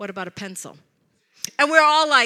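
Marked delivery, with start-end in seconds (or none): 0.0-0.8 very quiet, calm voice. Retelling how someone silent at the table finally spoke: calm, quiet voice. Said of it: "in just a calm, quiet voice says".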